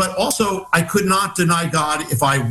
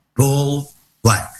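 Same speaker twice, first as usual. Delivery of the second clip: put-on whisper, lower pitch; 3 semitones lower than usual. Retelling what a man on a plane said: imitating someone whispering. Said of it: "in a whisper".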